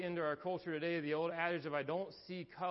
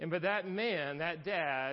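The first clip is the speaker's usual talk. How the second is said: ordinary talk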